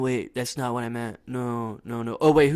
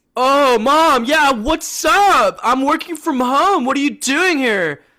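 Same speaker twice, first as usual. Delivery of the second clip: shrill, very loud, drawn-out, flustered panic; 13 semitones higher, 10 dB louder than usual. Describing a scene where Mom shows up at home, voicing Clark: Clark freaking out. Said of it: "he's freaking out too because Mom's here".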